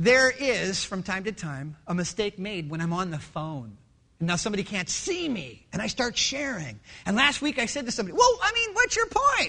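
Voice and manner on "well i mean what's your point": raised voice, shooting up very high in pitch. Speaker retelling a phone call with somebody last week: retelling a raised voice. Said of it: "why'd you raise your voice?".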